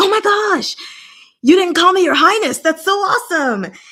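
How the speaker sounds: mock very high, loud, thrilled, excited squeal. Retelling a character's reaction at not being called your highness: imitating excited speech. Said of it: "he got super excited about it".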